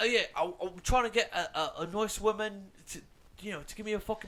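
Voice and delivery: bad put-on British accent. Retelling how they chatted with a man, the speaker uses a bad put-on accent. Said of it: "my accent was even good".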